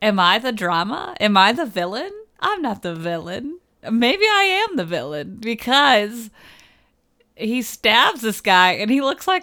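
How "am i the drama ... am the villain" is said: put-on voiceover voice, swooping and sing-song. Quoting a movie character's thoughts in a TikTok-style voice: TikTok voice. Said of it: "record the TikTok voice of the guy".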